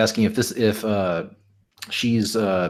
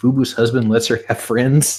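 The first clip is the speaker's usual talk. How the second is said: ordinary talk, nothing marked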